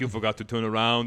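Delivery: put-on cyborg movie voice. Retelling own line to an opponent over proximity chat: Terminator voice. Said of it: "In a Terminator voice, real stupid".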